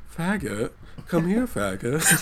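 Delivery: extremely exaggerated effeminate-sounding voice. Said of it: "you hear the world's gayest voice off screen go".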